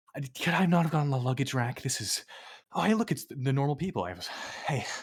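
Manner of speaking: high, loud, rushed, winded gasping. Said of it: "I am so out of breath".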